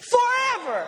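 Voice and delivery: high, shouted, emphatic, with conviction.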